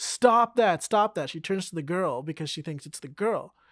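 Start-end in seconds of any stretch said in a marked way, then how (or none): 0.0-1.3 repeated high, loud shouting. Retelling how one of the girls shouted at another girl, retelling a girl shouting. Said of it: "just starts shouting like".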